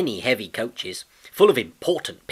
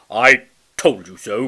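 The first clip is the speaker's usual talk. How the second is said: rude, raised voice; 8 dB louder than usual. Gordon answers after Edward fails to pull the heavy coaches, rude. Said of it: "said Gordon rudely".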